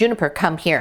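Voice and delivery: firm, serious, no-nonsense voice. Calling the dog Juniper to come, in the serious voice. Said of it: "that was the serious voice".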